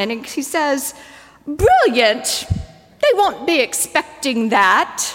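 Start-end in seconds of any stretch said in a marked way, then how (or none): 1.5-5.0 put-on precious, affected New Zealand accent. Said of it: "he says it in this precious New Zealand accent".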